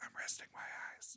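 soft, unvoiced, sleepy-sounding whisper. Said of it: "she always goes".

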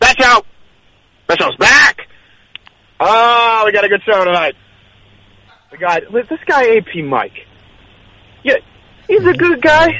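very high-pitched put-on voice. Doing an impression of the other speaker, who asked to hear it: impression of the other speaker. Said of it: "I can do a really good impression of you".

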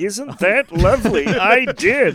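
high cartoon-alien voice. A voice actor answers an interviewer about his Looney Tunes role: Marvin the Martian voice. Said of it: "you did the voice of Marvin the Martian".

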